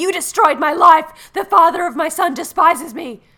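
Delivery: high, very loud, enraged furious screaming. Retelling a scene where a woman strangles Bill in the hospital, retelling a yell. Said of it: "is yelling at him".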